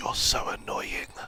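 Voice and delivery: soft, hushed whisper under the breath. Retelling what gets said to the cats: whispering. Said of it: "I look at them and I whisper".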